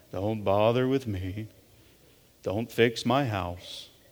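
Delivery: very low, slow, soft, dragged-out defeated mope. Speaker likens someone to a cartoon character, then does an Eeyore voice. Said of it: "lovable Eeyore from Winnie the Pooh".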